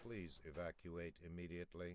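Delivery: flat monotone voice. Announcing an alarm that echoes through a corridor: toneless voice. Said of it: "A toneless voice echoes through the corridor".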